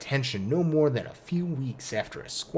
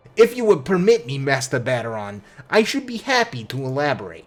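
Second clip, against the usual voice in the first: put-on New York accent, louder; 8 dB louder than usual. Voicing a character in a game, redoing the line: Raynor in a New Yorker voice. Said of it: "this was New Yorker".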